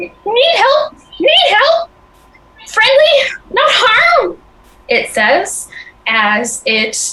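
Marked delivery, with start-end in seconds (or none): 0.0-4.4 very high, raspy, scratchy goblin squeak. Narrator voicing a goblin jogging toward the listener on a trail, scratchy goblin voice. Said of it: "with its scratchy voice".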